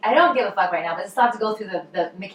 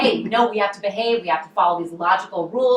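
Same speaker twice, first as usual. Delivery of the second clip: ordinary talk, nothing marked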